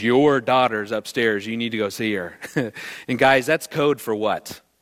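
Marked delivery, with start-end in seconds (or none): 0.0-2.4 menacing, foreboding tone. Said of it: "she goes".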